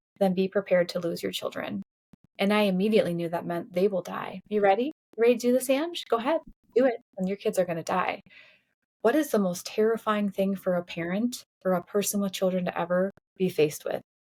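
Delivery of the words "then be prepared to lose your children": normal talking voice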